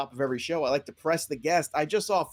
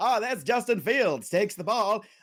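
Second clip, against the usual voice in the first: put-on high-pitched old-time radio announcer voice; 5 semitones higher than usual. Suggesting games be called in an old-time radio announcer voice. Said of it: "in that old nineteen twenties, thirties radio voice".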